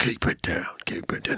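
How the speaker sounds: rough, raspy, gruff, hushed whisper. A game narrator voices two guards heard whispering: gruff whisper. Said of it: "you hear two men whispering, gruff voices".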